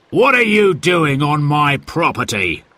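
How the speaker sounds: irate, angry, demanding, confronting voice. A stranger confronts Uncle Ted and the children, angry voice. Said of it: "Suddenly they heard an angry voice".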